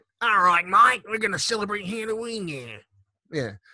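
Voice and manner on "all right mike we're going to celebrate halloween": horrible, badly done, put-on Australian accent. Mimicking Australians who came over here, in a horrible Australian accent. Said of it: "That's my horrible Australian accent".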